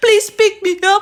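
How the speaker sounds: very high, loud, panicked crying and sobbing. Retelling a sister's phone call, mock crying, panicked plea. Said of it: "Iyak na ganito".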